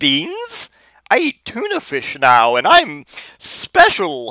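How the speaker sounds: ridiculous, high, sing-song cat voice. Speaker acts out a cat answering its old hobo cat buddies, imagined cat voice. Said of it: "that is the voice I imagine this cat to say".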